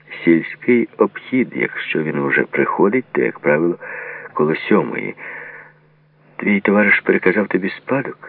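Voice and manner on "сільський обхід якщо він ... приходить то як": ordinary delivery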